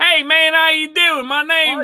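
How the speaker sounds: slow, drawn-out American accent. Retelling how people in Europe ask for one, doing an American accent. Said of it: "do an American accent".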